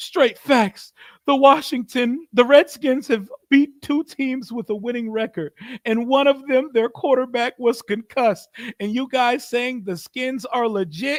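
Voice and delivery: whiny fake sobbing. Reading a viewer's donation message aloud, in a mock-crying voice. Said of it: "Let me read this with like in a crying town".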